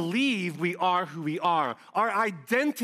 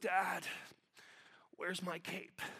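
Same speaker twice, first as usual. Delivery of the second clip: put-on groggy sleepy toddler voice, barely whispered; 15 dB quieter than usual. A father retells his three-year-old coming down in the morning, imitating groggy Silas. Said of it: "He's all groggy".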